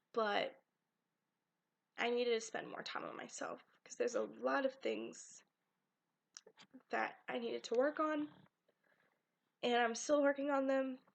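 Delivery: teary, choked-up voice on the verge of tears. Speaker talking to viewers about their summer, tearing up. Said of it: "I'm sorry, I'm tearing up".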